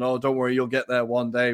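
ordinary talk

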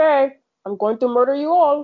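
broad put-on Cuban accent. Imagining what a man dressed like that would say, in an I Love Lucy Cuban accent. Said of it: "What kind of accent was that?".

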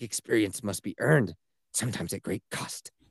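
over-the-top dramatic delivery, hushed and soft. Retelling how a guy quotes Optimus Prime, mock-dramatic Optimus Prime quote. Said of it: "he says it with so much drama".

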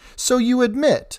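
very high pitch, strong and firm yet respectful. The Earl's wife interjects while the Earl is speaking, strong yet respectful. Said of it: "in a strong yet still respectful tone".

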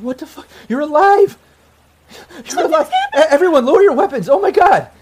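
very loud, very high, swooping tearful crying. Voicing a woman who dives into the player's arms, finding them alive, crying. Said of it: "And she's just crying".

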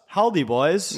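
put-on Swedish accent. Recalling the school bus commercial, the speaker quotes Gus in his Swedish accent. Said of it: "With his, like, Swedish accent".

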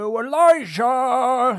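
very high, loud, shrill shout, drawn out. In a role-played scene, a character calls after Elijah, shouting out. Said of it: "to shout out".

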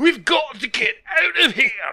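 put-on mixed Russian and Scottish accent. In an acted scene, a character calls to Romanov in an over-the-top Russian-Scottish accent. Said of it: "radioactive Russian, Scottish accents".

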